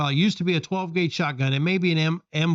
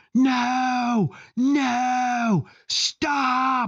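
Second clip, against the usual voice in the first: urgent, high scream with drawn-out "no"; 8 semitones higher than usual. Retelling how an instructor on the range reacted: imitating an instructor screaming. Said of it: "I hear the instructor screaming".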